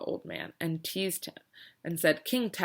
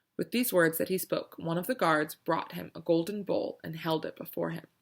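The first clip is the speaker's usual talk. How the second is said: plain reading voice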